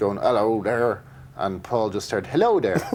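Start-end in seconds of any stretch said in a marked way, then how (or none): 0.2-1.0 put-on West Country British accent. Recalling pitching an idea to Paul, repeating his own West Country accent. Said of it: "kind of West Country accent".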